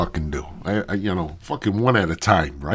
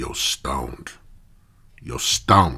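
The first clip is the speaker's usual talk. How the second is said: slow, stretched-out, drawn-out voice; 7 semitones lower than usual. Retelling a phone call from a friend: imitating friend Walter. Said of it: "He kinda sounds like that".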